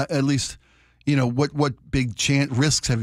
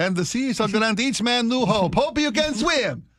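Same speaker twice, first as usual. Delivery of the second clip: very high, put-on Spanish accent; 10 semitones higher than usual. Joking about a movie's made-up quote, the speaker performs Columbus: mock Spanish Columbus accent. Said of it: "that was my Spanish Columbus".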